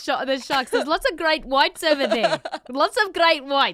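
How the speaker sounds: put-on very high, very loud South African accent. Imitating the South African voices heard during Shark Week, in a South African accent. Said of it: "allowed to do the accent".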